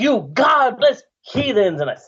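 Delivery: emphatic, forceful delivery. Showing a partner how he delivers the line with enthusiasm; emphatic, forceful declaration. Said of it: "I slam my fist on the table to emphasize it".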